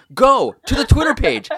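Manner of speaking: slow dramatic delivery. Plugging the podcast's Twitter page to a co-host, dramatic William Shatner delivery. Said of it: "I'm trying to be dramatic".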